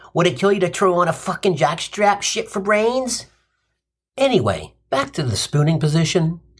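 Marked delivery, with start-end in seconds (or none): 0.2-3.3 put-on New Jersey tough-guy accent. Imagining a Roman commoner turning to another Roman, in Joe Pesci tough-guy accent. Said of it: "New Jersey, tough guy accent say".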